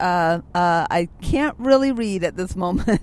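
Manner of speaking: ordinary delivery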